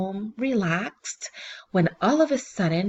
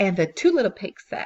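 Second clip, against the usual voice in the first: plain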